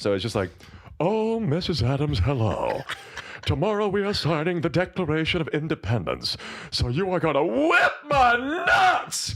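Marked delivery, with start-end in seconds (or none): 1.0-9.3 very high, swooping, aroused voice. Doing a bit as John Adams greeting Missus Adams: John Adams voice. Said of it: "of John Adams".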